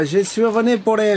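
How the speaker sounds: halting, attempted Italian accent, trailing off. Retelling what Marco said when he came for the solar panels, in Marco's Italian accent. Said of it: "Je sais pas trop faire l'accent italien".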